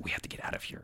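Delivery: very quiet whispered word. Voicing a character who leans toward the group and whispers. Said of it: "leans to you guys and whispers".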